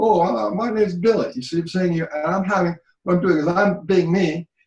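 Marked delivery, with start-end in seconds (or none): 0.0-1.3 high-pitched sock-puppet character voice. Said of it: "casting my voice into my hand as the character".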